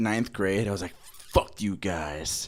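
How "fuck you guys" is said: put-on moody, defiant, angsty teenage outburst. Retelling an angsty ninth-grade reaction: imitating own angsty teen self. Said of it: "one of my most angsty things".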